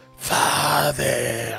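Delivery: raspy, hissing character voice. Describing a character in a Dracula shadow play: Radu voice, raspy hiss. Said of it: "in his Radu voice is like, ... this raspy hiss of a voice that he has".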